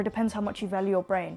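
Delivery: normal talking voice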